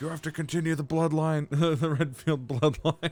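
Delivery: furious, insistent ranting. Retelling a meme where Chris demands to continue the bloodline: furious Chris voice. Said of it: "furious Chris. Being like".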